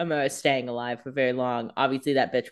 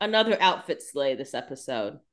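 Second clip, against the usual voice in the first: ordinary talk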